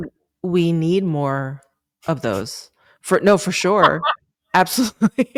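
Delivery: heavy, oozing, dripping sarcasm. Responding to the other speaker's remark, with dripping sarcasm. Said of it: "The sarcasm is just like dripping".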